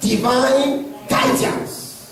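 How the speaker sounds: "divine guidance" stressed and drawn out slowly. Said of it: "I'm emphasizing it".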